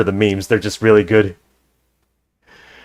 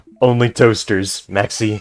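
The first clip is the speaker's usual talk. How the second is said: ordinary talk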